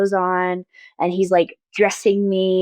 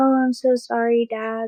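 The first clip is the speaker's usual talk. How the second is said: crying while speaking, in a higher pitch; 4 semitones higher than usual. Retelling how someone cried and apologized to a father: imitating Dallin crying. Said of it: "starts crying".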